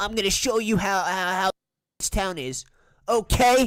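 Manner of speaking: loud, cartoonish anime-character voice. Mocking the way a video's speaker talks: imitating an anime character voice. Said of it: "talking like a f-, anime character".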